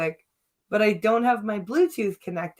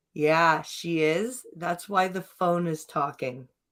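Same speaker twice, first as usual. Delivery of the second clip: put-on dry, low, flat, matter-of-fact deadpan; 4 semitones lower, 4 dB quieter than usual. Retelling the friend's answer in the locker room: imitating a deadpan reply. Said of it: "that deadpan".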